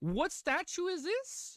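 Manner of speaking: very high, squeaky voice, drawn out. Reacting in surprise to a statue on screen: voice a little squeaky. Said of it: "My voice got a little squeaky".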